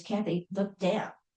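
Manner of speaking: put-on whisper. Retelling what a husband whispered during a photo shoot: imitating a whisper. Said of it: "my husband whispers".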